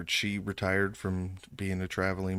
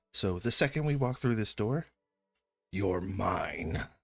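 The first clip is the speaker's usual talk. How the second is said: acted serious delivery. Retelling a night out, quoting a man's warning to Rex: imitating someone getting serious. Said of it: "And he gets real serious".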